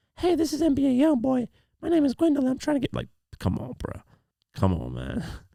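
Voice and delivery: very high put-on young Southern man's voice. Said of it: "sounded as though she was a much younger male from the southern states".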